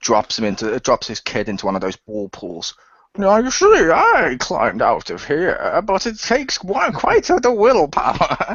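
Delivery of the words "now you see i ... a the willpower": slow, drawn-out voice, pitched up, swooping. Riffing on a Bane-as-dad bit with others, in the Bane voice. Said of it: "in the Bane voice".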